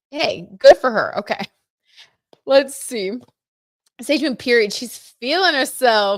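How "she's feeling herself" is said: put-on slow, loud, stretched-out New York accent. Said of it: "New York accent".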